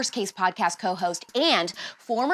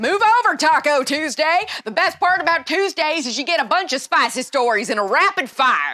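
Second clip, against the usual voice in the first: loud, high, hammed-up put-on southern US accent; 6 semitones higher, 7 dB louder than usual. Podcast host introducing the Hot Take Tuesday segment: southern accent. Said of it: "I don't know why I'm talking in a southern accent".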